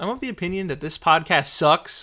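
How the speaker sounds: shouted loudly. Podcast host repeating the other host's new catchphrase, yelling. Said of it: "You don't need to yell".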